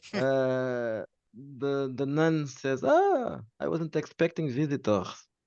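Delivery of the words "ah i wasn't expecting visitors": put-on German accent, high-pitched with swooping pitch. Narrating a scene, voicing a nun who meets unexpected visitors: German accent. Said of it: "She has a German accent".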